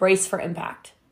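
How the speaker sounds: ordinary talk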